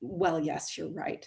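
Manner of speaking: smug, complacent, self-satisfied knowing tone. Retelling own reply to Italians about the U.S.: imitating own smug reply. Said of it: "And I smugly say".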